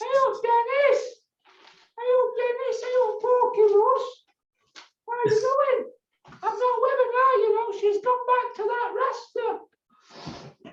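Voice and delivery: squeaky voice pitched very high. Having a go at Ross Birkinshaw as he greets Dennis, in a squeaky Ross Birkinshaw voice. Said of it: "It's because he's got a squeaky voice".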